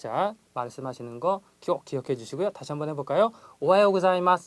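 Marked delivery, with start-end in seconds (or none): 3.6-4.5 very loud, vigorous, energetic, full-volume voice. Japanese lesson, modeling the morning greeting for learners to copy: energetic greeting. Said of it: "저처럼 힘차게 얘기해 주시고요".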